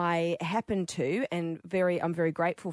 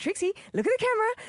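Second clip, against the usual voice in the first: high, fast, desperate, begging plea. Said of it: "I'm like".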